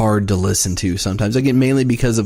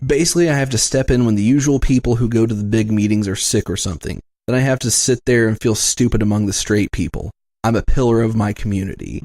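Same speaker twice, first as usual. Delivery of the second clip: usual speaking voice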